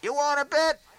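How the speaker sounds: loud, high-pitched shout. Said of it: "I yell out".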